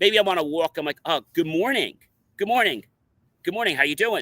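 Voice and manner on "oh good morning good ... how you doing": sincere, genuine, earnest delivery. Explaining how a greeting should sound, the speaker shows a sincere greeting. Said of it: "that's sincere".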